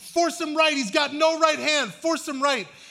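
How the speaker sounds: angry, high-pitched, mock coach-style shouting. A coach retells yelling instructions to his team from the bench: retelling his own yell. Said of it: "I'm yelling at the team".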